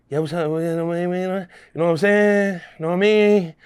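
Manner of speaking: put-on breathless voice. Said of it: "He used to talk like that, like he was, uh, out of breath".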